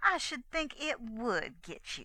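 sharp, snapping, reproachful tone. Narrator reads a girl snapping back at a man, rebuking him. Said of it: "snapped back the girl".

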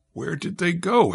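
bewildered, dumbfounded, stunned, at a loss. Just after the enemy suddenly disappears mid-battle, dumbfounded. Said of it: "blinking and dumbfounded".

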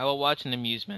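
voice cracking, breaking on a word. Mid-rant about identity theft on a show, voice cracking. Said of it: "My voice just cracked right there".

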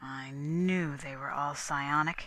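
softly spoken. A narrator reads a man speaking to his companions after the weapon is taken, said softly. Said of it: "he said softly".

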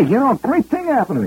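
put-on Bronx accent, rattled off quickly. Retelling what a vice president suddenly told him, in a Fordham Road accent. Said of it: "he's talking like he's from Fordham Road".

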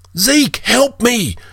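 very high-pitched, piercing scream. A chained slave calls to Zeke as humanoids move toward him, screamed. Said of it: "he screamed".

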